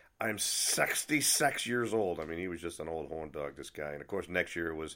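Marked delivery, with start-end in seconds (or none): 0.2-2.2 voice of a man who's had a few. Recalling what a man you only ever saw drunk always said, imitating Peter's drunk voice. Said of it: "always in his drunk voice".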